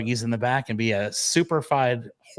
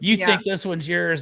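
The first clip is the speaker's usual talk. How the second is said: mock taunting, higher; 5 semitones higher than usual. Retelling taunting someone over a bargain buggy: imitating a taunt. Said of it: "I was taunting her".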